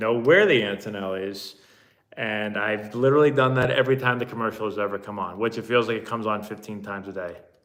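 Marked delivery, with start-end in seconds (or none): none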